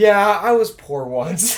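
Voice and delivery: mock snooty, smug tone. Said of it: "she has the nerve to sit there and go".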